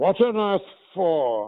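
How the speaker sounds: very high pitch with the words drawn out long. Retelling how the actor answered him: James Mason voice. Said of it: "I do an impression of you".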